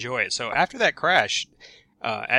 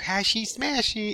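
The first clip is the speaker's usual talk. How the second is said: put-on very high, tiny little child voice; 10 semitones higher than usual. A parent recalls a child repeating a joke phrase, in a little child voice. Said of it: "hear this little child voice go".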